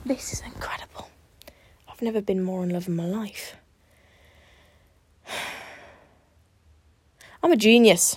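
out of breath. Speaker celebrates getting her guitar to fit, talking out of breath. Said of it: "Out of breath".

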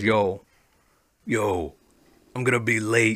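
slow, unhurried, drawn-out "yo". Retelling a phone call about running late: imitating the caller's voice. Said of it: "Is that the voice?".

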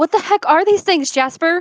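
very loud, high shout in a character voice. Voicing Maribel, who shouts on seeing strange creatures: shouting as Maribel. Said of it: "Maribel shouting something?".

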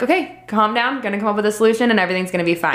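plain

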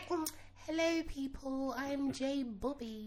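very slow, hushed, soft voice. Mocking another speaker's soft greeting: mocking a soft telephone voice. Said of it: "That's like me coming in here being like".

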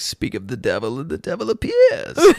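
put-on character voice, high and swooping. Retelling a movie scene at a listener's request, imitating the character's voice. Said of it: "Do it in his voice".

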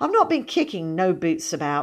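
ordinary delivery

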